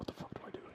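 very quiet covert whisper. Acting out a friend asking for help at a bar: whispering. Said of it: "and they're just whispering".

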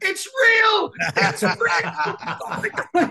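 very high, very slow, drawn-out scream. Retelling a best mate's reaction to a kick and uppercut: imitating a friend screaming. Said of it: "my best mate just screamed at me".

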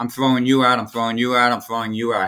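ordinary talk, nothing marked

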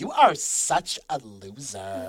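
put-on low Valley Girl voice with swinging pitch. Speaker imagines a character speaking to someone; Dora Sphinx in Valley Girl voice. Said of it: "with like a freaking like Valley Girl voice".

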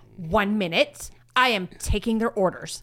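acted, very cheeky and sassy brush-off. Retelling a waiter's reply to a coworker: imitating a sassy waiter. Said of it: "Like, very sassy".

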